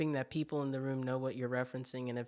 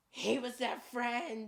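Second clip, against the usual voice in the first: very high, all-out, full-volume scream; 10 semitones higher than usual. Retelling a movie scene, imitating Harry Potter screaming. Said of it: "he screams really loud".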